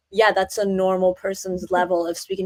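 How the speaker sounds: ordinary talk, nothing marked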